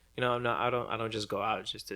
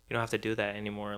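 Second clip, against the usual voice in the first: ordinary delivery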